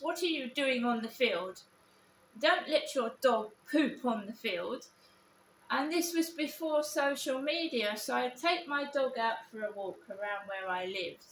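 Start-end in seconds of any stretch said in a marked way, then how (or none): 0.0-4.8 put-on upper-class posh English accent. Recalling people who bullied the speaker, imitating them: mocking posh accent. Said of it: "they used to come at me with posh accents".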